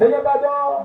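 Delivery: fervent, intense pleading tone.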